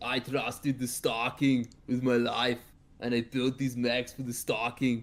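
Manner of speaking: put-on heavy Austrian accent. Imagining what a character named Sid would say, in an Arnold Schwarzenegger accent. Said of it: "Sid has an Arnold Schwarzenegger accent".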